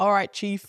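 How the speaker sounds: mock, put-on sarcastic tone. Describing how Simon Peter addressed Jesus: imitating a sarcastic tone. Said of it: "the sarcastic, potentially sarcastic tone".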